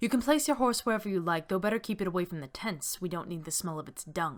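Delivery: ordinary talk, nothing marked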